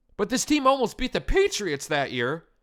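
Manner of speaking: voice cracking and breaking mid-line. Making a point in own voice, voice cracking mid-sentence. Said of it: "Voice crack".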